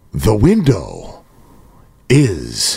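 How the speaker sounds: low, drawn-out, deliberate, very slow, spelled-out words. Repeating a point to the others in the group, said real slow. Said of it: "let me say this real slow".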